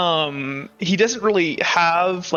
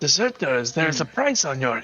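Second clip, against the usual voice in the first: mumbled, muttered under breath; 4 semitones lower, 3 dB quieter than usual. A narrator voices a man warning the deserters, mumbling under his breath. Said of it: "mumbles under his breath".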